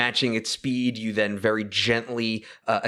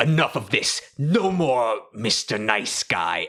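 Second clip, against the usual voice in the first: swooping, bleeding digital demon voice. Voicing the wounded mailer demon losing patience: mailer demon voice. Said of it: "he is like".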